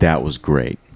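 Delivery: condescending, patronizing tone. Showing how to tease friends after a set: condescending tone. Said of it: "condescendingly be like".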